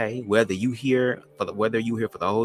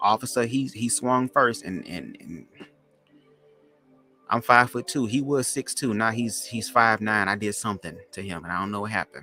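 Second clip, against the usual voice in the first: ordinary talk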